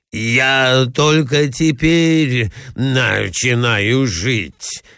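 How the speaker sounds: very slow, choked-up mumble, overcome with delight. A man speaks up, muttering and choking with rapture. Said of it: "бормотал он, захлебываясь от восторга".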